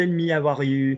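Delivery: French accent in English. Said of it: "Twang, twang, twang".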